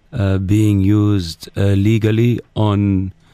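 put-on Dubai accent, halting. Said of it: "this is, uh, security, uh, Ahmed Al-Wawari".

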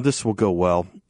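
dry sarcastic tone, meaning the opposite. Commenting on the vice president being put in charge of immigration: sarcastic. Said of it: "I say sarcastically".

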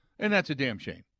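dry, sarcastic, tongue-in-cheek fake regret. Reacting to a player's unhappy post-game quotes: sarcastic. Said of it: "I say that sarcastically".

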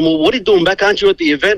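mock flustered, freaked-out, baffled tone. Retelling how a wife reacted to an early return home: imitating a freaked-out wife. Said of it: "freaking out, going".

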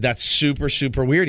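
ordinary delivery

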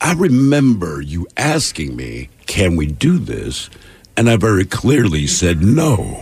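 play-acted calm, very slow and measured delivery. Retelling how Dave walked into the studio: imitating Dave speaking very calmly. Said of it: "and very calm, just goes".

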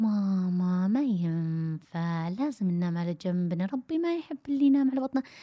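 gentle, affectionate, calm, tender coaxing tone. Showing how parents tell a child to sleep on its side: gentle, calm, tender tone. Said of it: "لما نتكلم بحنان وهدوء".

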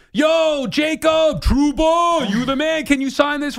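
acted shouting. Telling a story of calling out to a recognized man on the street, retelling a yell. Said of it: "And I'm yelling at him".

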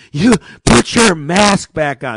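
very loud, drawn-out, unhinged angry yell. Retelling what the woman behind the counter said: imitating someone unhinged. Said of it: "She gets unhinged".

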